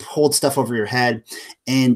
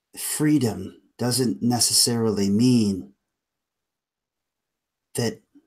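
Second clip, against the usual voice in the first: aged voice, grave and solemn tone; 4 dB quieter than usual. Voicing a tree spirit that speaks to the characters: old, solemn voice. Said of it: "speaks in just an old, solemn voice".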